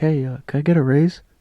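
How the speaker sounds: very meek, timid, barely daring tone. Showing how not to ask a boss for a raise: demonstrating a level-one ask. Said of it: "Not a one".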